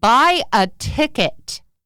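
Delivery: big, loud, high, booming commanding voice. Telling a story where a man hears a voice answer him: retelling a booming voice. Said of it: "he heard this booming voice say".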